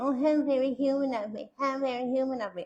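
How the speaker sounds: high, fast, sarcastic, dismissive rattle.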